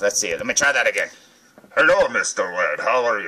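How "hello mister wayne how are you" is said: low, muffled voice through a covered mouth. Reviewing toys, the speaker voices a Bane figure: muffled Bane voice, hand over mouth. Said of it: "I can't do that and not put my hand over my mouth".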